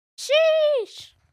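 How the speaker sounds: high, loud meme-style "sheesh" call. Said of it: "touch their, like, inside of their elbow with two fingers and go".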